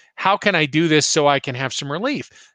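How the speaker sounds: normal talking voice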